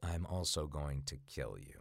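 very low, hushed, quiet menacing delivery. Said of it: "super quiet and menacing and turns on a dime".

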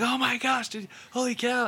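very high, effusive, gushing excitement. Describing a scene where two characters run together, acting out their gushing. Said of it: "they're just kind of gushing".

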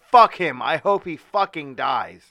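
very loud screaming at the top of the lungs. Recounting a bloody wrestling match, the speaker imitates New Jack screaming. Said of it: "He's like screaming that".

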